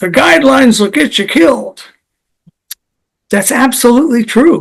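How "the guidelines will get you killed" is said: high, creaky, rough-edged put-on voice. Quoting a friend's saying in an imitation of his accent: Bradley Bale accent. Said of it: "my best Bradley Bale accent".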